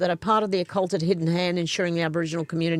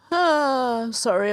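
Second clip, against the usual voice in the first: mid-yawn voice with a high, drawn-out ah; 7 semitones higher than usual. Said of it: "I'm having a yawn and a stretch".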